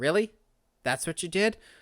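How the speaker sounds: normal talking voice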